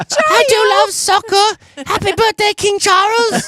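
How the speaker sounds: very high-pitched, slow delivery. Joking that a footballer being knighted would sound like David Beckham's high voice. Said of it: "A guy who has a higher voice than I think he should have".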